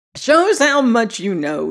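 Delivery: cackling, mocking tone. [name] retorts to the other speaker, cackling. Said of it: "he cackled".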